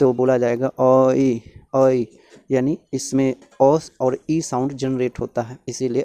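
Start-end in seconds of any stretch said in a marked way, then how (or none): 0.7-2.0 ai slowly broken into a and ee. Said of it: "ऐ को अगर slow motion में बोला".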